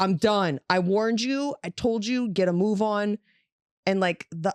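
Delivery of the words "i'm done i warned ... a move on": plain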